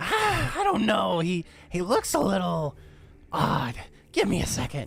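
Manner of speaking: high swooping voice. Game master voicing a character answering the players, in a higher-pitched voice. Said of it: "the higher pitched voice".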